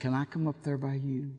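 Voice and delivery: very soft, hushed, sweet little voice. Retelling her question to Papa as he went to sleep, imitating a little sweet voice. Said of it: "little old sweet voice".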